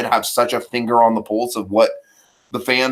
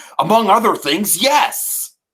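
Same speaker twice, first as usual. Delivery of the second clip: frustrated, fed-up voice with pitch lifted; 9 semitones higher than usual. Quoting a movie scene line, imitating Chris Evans' frustrated delivery. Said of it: "Chris Evans', like, frustrated delivery here".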